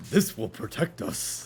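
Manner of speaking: soft, breathy, whispered hero character voice. Mid-conversation, the speaker quotes a game line in a Winston voice. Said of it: "Why'd you sound like Winston then?".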